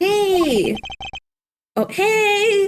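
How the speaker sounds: shouting with trembling voice. A character suddenly calls out to someone, in a trembling shout. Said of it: "Who are you shouting at? Why did your voice tremble?".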